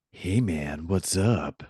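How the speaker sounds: eerie, ghostly, spooky put-on voice. Podcast co-host answering the host's greeting, in a spooky voice. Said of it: "kind of a spooky voice you used there".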